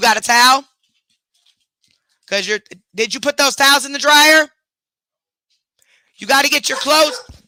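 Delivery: high-pitched shouting. Thinking the mic is muted, the speaker calls out to someone nearby, yelling. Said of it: "I didn't mean to yelling out here".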